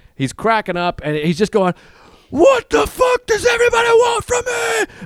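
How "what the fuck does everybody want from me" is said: very high, all-out screaming. Retelling what a stranger on the street was yelling: imitating a man screaming.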